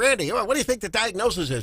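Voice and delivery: put-on voice with a New York accent. Recalling a brilliant mentor who chewed gum while questioning randy, imitating a mentor's new york voice. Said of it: "he had this kind of a voice".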